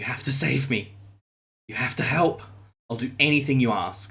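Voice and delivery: sobbing, crying, desperate pleading tone. A game master voices a sobbing man pleading with a player's character: desperate pleading. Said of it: "searches for your eyes".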